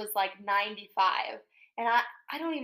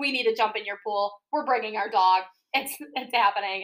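plain

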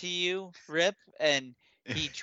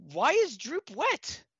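goblin voice, pitched very high; 11 semitones higher than usual. Voicing the goblin just splashed awake with ale, Droop goblin voice. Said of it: "in goblin".

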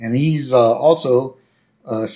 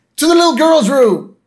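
high, loud rallying cheer. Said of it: "To which Homer says".

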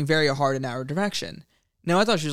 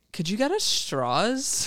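put-on high, bouncy, swooping sing-song young woman's voice; 6 semitones higher than usual. Retelling what a girl said to him: imitating a girl. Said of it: "doing one girl's impersonation spot on".

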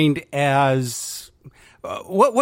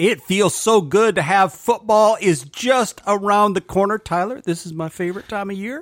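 faint southern twang creeping in, pitched up; 5 semitones higher than usual. A father co-host tells his son, the host, about football season with a hint of southern twang. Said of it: "You almost got a southern twang when you said that".

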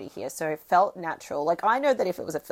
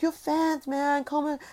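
high, eager voice. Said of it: "they were like".

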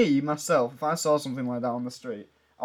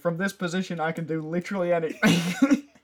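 grave, earnest, slow, dead-serious, pitched-up voice; 5 semitones higher than usual. Retelling a film scene where a character takes ballet seriously: imitating a serious delivery. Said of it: "he takes it really seriously".

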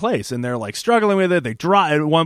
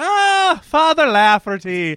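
put-on Irish accent, pitched very high; 12 semitones higher, 4 dB louder than usual. Retelling a scene where MacGyver walks into the church: MacGyver's put-on Irish brogue. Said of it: "he like throws on the Irish brogue".

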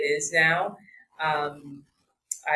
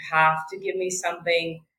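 hysterical, sobbing cry. Recalling lying on the floor the morning of leaving, praying, retelling hysterical crying. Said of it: "I was like just hysterically crying".

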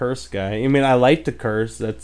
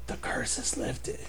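secretive whisper, much quieter. Retelling a man's deathbed words to his son, whispering like telling a secret. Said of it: "whispers, like, he's telling him a secret".

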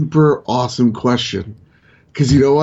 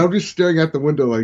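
usual speaking voice

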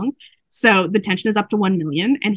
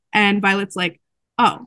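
ordinary talk

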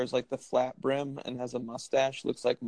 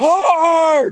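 put-on scream, higher and louder; 12 dB louder than usual. Imitating a curler throwing the stone: imitating a curler screaming. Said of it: "just the screaming back and forth".

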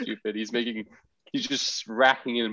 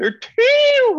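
very high, loud, raised voice. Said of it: "when he just raises his voice".

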